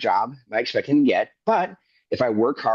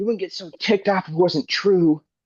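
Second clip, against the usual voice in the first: high, put-on sarcastic yell; 8 semitones higher than usual. Retelling a taunt yelled at a friend walking away: imitating own past yell. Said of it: "I yelled out".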